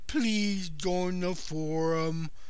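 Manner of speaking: sorrowful, mournful, sad, "forum" drawn out. Asking listeners to join a forum, sounding sad. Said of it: "did that sound sad enough for you?".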